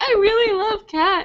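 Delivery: very high, teary, sad voice. Retelling a video of a girl who starts crying: imitating someone sad and tearful. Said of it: "really sad".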